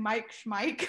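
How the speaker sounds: plain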